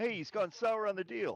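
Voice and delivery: very high, shouted yelling outburst. Narrating the game, the speaker voices the halfling, yelling out. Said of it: "the halfling yells out".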